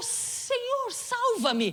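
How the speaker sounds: mock shouted cry. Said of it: "por que que ele gritou".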